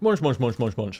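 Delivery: hamster-like chomping and munching noises. Eating a biscuit on stream, doing a hamster impression. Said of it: "That was my hamster impression there".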